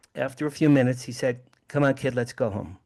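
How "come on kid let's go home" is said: put-on bored, flat voice. Retelling how his father reacted to the craft: imitating his bored father. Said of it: "My father looked bored".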